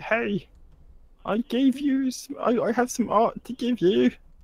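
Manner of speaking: very high-pitched put-on British voice. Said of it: "did you sound like, um, Technomoan there?".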